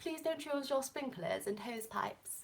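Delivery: very quiet, soft put-on British accent. Speaker reads out a text asking people to save water, in a put-on british accent. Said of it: "That was my best British accent".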